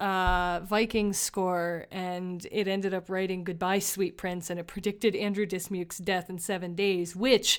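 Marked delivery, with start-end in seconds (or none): none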